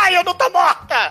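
play-acted, high-pitched, screamed-out cry. Retelling how the supposedly dead young woman suddenly speaks up, retelling a scream. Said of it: "Ela começa a gritar".

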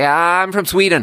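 very high, panicked, blurted out. Retelling blurting something out to a stripper: imitating own panicked blurt. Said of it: "in such a deep state of panic that I was just like".

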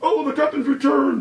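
shrill, very high-pitched shouting crowd voice. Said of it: "You hear some people shouting".

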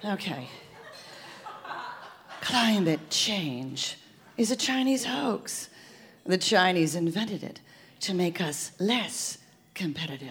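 low, sultry, seductive secret-agent voice. Told by a partner to try the line seductively like a spy: seductive spy voice. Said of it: "try it seductively like a spy".

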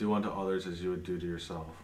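hushed, soft half-whisper. Voicing a half-whisper that reaches a player's ears: half-whispering voice. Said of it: "A whisper reaches your ears and it says".

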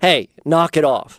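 put-on stern voice. Explaining discipline, acting out a dad scolding a misbehaving kid, mock-stern reprimand. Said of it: "It's a stern voice reprimand".

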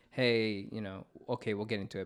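ordinary talk, nothing marked

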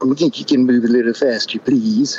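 droopy, glum cartoon dog voice. Describing voices that stop trying, the speaker demonstrates in a Droopy voice. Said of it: "it turns into Droopy. The little cartoon dogs".

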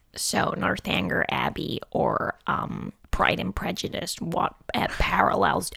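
creaky vocal fry, very slow and breathy. Retelling an interviewer's question on Zoom: imitating an American interviewer's vocal fry. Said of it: "I love that vocal fry there".

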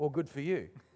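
mock sarcastic tone. Retelling a reply heard when asking what to do next: mock sarcastic reply. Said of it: "which is sarcasm".

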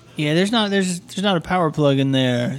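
politely patronizing, condescending tone.

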